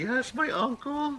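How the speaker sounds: play-acted, very high, frightened small voice. Retelling how the niece answered the old lady: imitating a scared girl.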